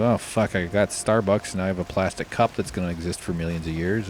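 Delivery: normal talking voice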